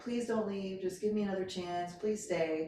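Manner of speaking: play-acted weeping, tearful, begging voice. Retelling a woman begging as the speaker's dad came to get them: imitating crying, pleading. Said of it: "she was like crying, like".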